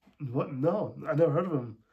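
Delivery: wary, suspicious, doubtful. Suggesting how a film character could have answered: imitating a suspicious reply.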